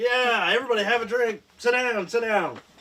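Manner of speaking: big boisterous voice. A game master voices a man in the bar after the jukebox is plugged in, big boisterous voice. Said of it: "he's got that big boisterous voice".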